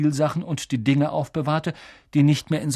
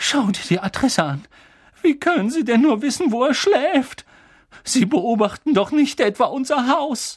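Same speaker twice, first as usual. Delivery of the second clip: quavering, trembling voice, pitched up throughout; 9 semitones higher, 3 dB louder than usual. A narrator reads the aunt speaking to the uncle about an address: trembling voice. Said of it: "mit zitternder Stimme".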